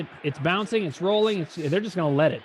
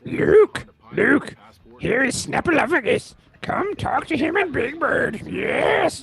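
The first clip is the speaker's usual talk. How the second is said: small, pitched-up alien creature puppet voice; 7 semitones higher, 4 dB louder than usual. Asked whether he does Yoda, the speaker answers in a Yoda voice. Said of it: "It's the same voice".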